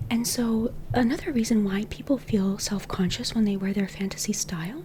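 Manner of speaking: whispering. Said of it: "This is why I whisper".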